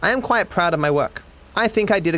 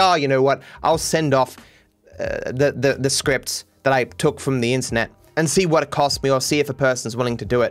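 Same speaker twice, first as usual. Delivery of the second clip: plain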